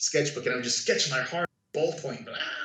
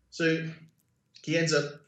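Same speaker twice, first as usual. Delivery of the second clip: plain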